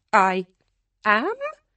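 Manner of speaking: uncertain, hesitant tone with pitch rising at the end. Hannah replies to someone who greets her by name; uncertain, rising like a question. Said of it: "Hannah said uncertainly, her voice rising at the end".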